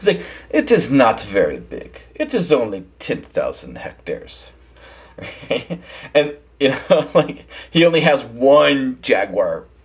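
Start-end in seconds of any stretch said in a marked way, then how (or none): 0.5-4.5 put-on Hungarian accent with swooping intonation. Quoting a Brazilian ranch owner he befriended, in a Hungarian count accent. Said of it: "he talked like a Hungarian count".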